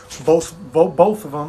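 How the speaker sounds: stuttering, stumbling over one repeated word. While explaining coaching plans, the speaker starts stuttering. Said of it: "I'm stuttering".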